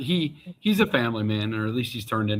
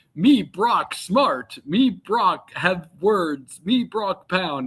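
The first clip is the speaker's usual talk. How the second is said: very slow, pitched-up, simple, plodding brute voice; 6 semitones higher than usual. Recalling joking with friends about Brock Lesnar, in a Grimlock voice. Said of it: "we always kind of made him sound like Grimlock".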